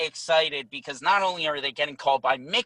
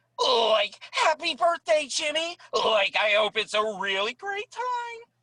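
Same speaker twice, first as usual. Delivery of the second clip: very high cartoon voice with swinging, swooping pitch; 10 semitones higher than usual. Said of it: "You're gonna be like".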